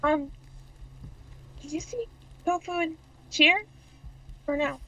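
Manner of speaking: slow, careful, unhurried half-whisper. Greeting a returning companion in a sleeping camp: half-whispering. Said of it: "whispering, by the way".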